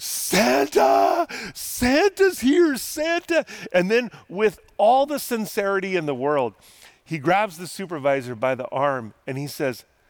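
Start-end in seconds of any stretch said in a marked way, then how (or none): 0.0-3.5 very high, very slow, drawn-out shrieks. Retelling the scene where the supervisor announces Santa, imitating Buddy the Elf screaming. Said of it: "Buddy the Elf just starts screaming".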